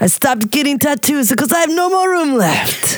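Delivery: clumsy, bad put-on Russian accent. Answering a question about getting more tattoos, in a Russian accent. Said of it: "I love your Russian accent".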